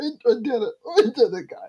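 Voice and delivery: put-on happy crying anime hero voice. Comparing a quiet character to an anime hero: imitating Deku crying happily. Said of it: "he is just so happy".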